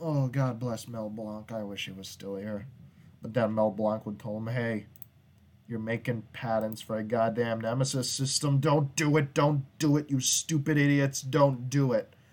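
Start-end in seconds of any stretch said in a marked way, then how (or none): 4.5-12.0 loud, furious, raging tirade. Imagining someone scolding a company over its Nemesis patents, mock-enraged rant. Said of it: "That was rage".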